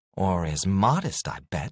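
ordinary talk

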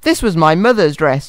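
ordinary delivery, nothing marked

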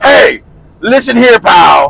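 very slow, drawn-out, loud angry shout.

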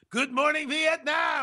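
very high, over-the-top broadcaster-style voice. Greeting listeners live on the radio, over the top. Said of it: "I'm a little over the top".

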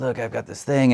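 rasping voice. Retelling a cold call from the director: imitating Ava DuVernay's raspy voice. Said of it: "She's got this great raspy voice".

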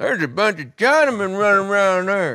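country Kentucky local accent. Imitating a local reacting to henchmen running around Kentucky: imitating a Kentucky local. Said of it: "some guy going".

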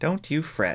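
whispered, high and hushed. A woman speaks to the narrator as a crowd murmurs, whispered. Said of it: "Calpurnia whispered to me".

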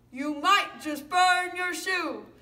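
loud, high lion voice. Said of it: "both my lion voice and my mouse voice".

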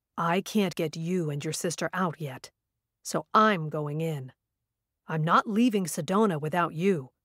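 deep, low, dangerous, menacing voice. After a slow breath, he answers the narrator in a deep, dangerous voice. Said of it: "He took a slow breath, / his voice deep and dangerous. / his voice deep and dangerous".

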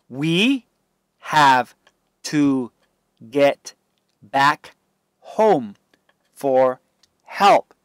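ordinary delivery

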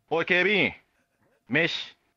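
Japanese yankee delinquent-style talk. Speaker acts out a Nara Aeon Mall yankee addressing a security guard: mall yankee impression. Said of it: "奈良県イオンモールのヤンキー".

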